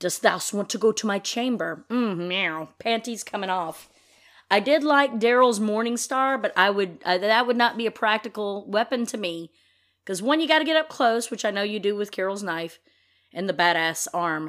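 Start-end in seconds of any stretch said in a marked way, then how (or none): 0.0-1.8 mock Shakespearean stage accent. Imagining a line from the TV character Ezekiel, in Ezekiel's Shakespearean accent. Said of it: "keep that Shakespearean accent".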